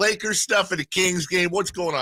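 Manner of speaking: put-on, very high, playful teasing jeer. Retelling teasing a lakers fan walking by: retelling playful heckling. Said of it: "I'm having fun with him".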